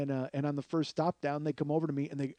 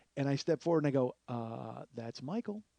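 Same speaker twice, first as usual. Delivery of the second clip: plain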